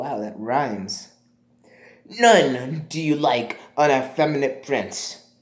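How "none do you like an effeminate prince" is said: put-on tough-guy gangster voice. Reading a sixteenth-century play speech in an assigned voice, gangster voice. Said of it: "gangster voice".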